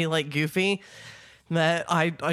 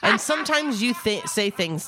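plain

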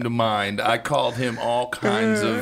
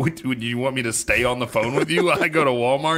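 usual speaking voice

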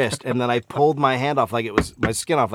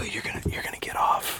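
unvoiced quiet whisper, close. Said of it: "I like to go up quietly".

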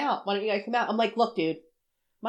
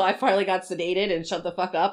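ordinary delivery

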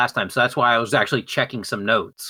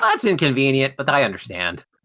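ordinary talk

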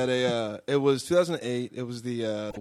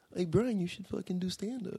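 put-on kid voices, higher and quieter; 8 semitones higher, 6 dB quieter than usual. Asked to do an impression of two kids from his school: impression of school kids. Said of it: "Can you do an impression of them?".

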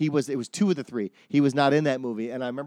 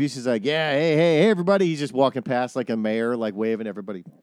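normal talking voice

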